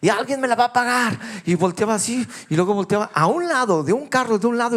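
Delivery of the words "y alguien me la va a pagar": mock angry street-brawler voice, loud shout. Retelling how an angry man shouted at another driver: imitating an angry loud shout. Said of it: "a gritar, pero fuerte".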